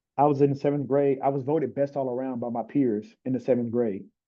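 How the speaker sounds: ordinary delivery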